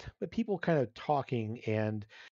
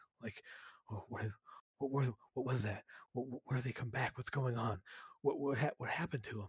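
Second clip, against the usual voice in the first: concerned, not alarmed, much quieter and faster; 8 dB quieter than usual. Acting out how the group reacts to the disappearance, concerned, not alarmed. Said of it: "there's definitely a more voices uh, in concern".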